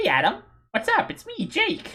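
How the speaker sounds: very high, swooping, bouncy full cartoon voice. Discussing a voice actor's signature voice, then demonstrating it: Tom Kenny voice. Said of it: "It's the most just like".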